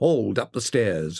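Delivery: ordinary delivery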